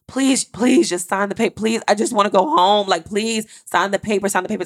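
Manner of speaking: put-on shrill, desperate pleading in a young kid's voice. Retelling a 14-year-old begging a woman to sign the papers: imitating a shrill 14-year-old pleading. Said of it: "the sound and the shrill like in this 14 year old kid's voice".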